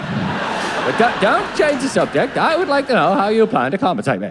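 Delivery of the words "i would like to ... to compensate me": put-on laid-on, generic posh southern English accent. Complaining to a member of staff about compensation, in a posh voice with Terrance and Phillip. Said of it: "generic southern posh voice".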